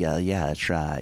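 eager, fawning, eagerly agreeable tone. Retelling how a record guy agreed with everyone: imitating an eager agreeing record guy. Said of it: "he talks like this".

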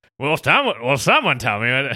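put-on slowed old-fashioned film voice. Telling a film anecdote, the speaker acts out how an actor said it: old-timey 50s Rock Hudson voice. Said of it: "He's like in a 50s, like old timey".

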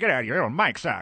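put-on old-timey, old-fashioned manner of speaking. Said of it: "That sounds like an old-timey cuss word".

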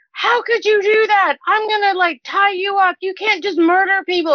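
high, freaked-out, mock paladin screaming rant. Retelling how the paladin screamed at the speaker's character: imitating someone screaming. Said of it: "starts screaming at my character".

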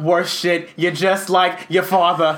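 loud, full Boston accent. After mentioning a move to Boston, saying a line in a Boston accent. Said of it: "the only thing I can say with like a Bostonian accent".

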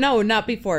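ordinary talk, nothing marked

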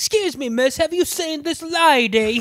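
put-on Cockney accent with lady drawn out. Retelling a movie scene, imitating Malcolm McDowell asking about a lady: Cockney accent. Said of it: "good old Cockney, Malcolm McDowell comes in and goes".

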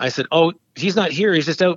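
ordinary delivery

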